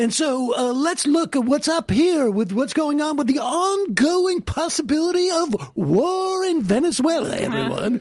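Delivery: detached, put-on broadcast-announcer delivery. Explaining how a detached presenter plays a character, in an announcer voice. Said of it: "you get into an announcer voice".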